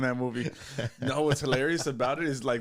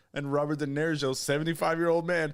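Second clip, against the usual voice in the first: ordinary delivery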